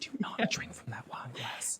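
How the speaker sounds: unvoiced, slow, hushed whisper. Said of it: "every mom is whispering that".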